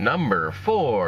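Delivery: mechanical, robotic announcer voice. Remembering a radio countdown show, the speaker imitates it in a robotic countdown announcer voice. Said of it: "that kind of like robotic voice".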